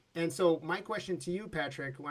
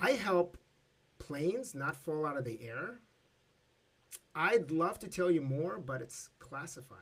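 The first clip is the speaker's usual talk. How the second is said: acted flat, deadpan, unperformed delivery. Retelling a party story, quoting an engineer's reply: imitating a flat-faced delivery. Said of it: "so total flat face".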